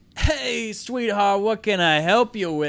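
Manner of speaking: loud, gruff put-on big-man lumberjack voice. Retelling how a man at the counter greeted the speaker; gruff old lumberjack voice. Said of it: "gruff voice".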